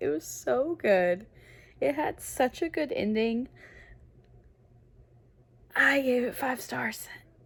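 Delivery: high, teary gush, holding back tears. Just finished reading Phoenix Unbound and talking about it, trying not to cry. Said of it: "I'm trying not to cry".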